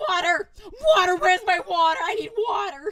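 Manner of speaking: frantic, panicked, very loud, high yelling. Retelling a friend's reaction to a hot pepper: imitating panicked cries. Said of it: "he was like".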